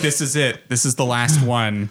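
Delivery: ordinary delivery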